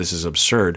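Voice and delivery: talking through an imitated laugh. Retelling his reaction after being told no: imitating a laugh while talking. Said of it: "kinda laugh like".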